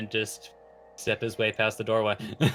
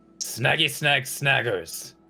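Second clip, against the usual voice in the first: impatient character yell, higher; 3 semitones higher than usual. Ithanix finally loses patience waiting for the password: Ithanix's impatient shout. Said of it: "just gets impatient and just shouts".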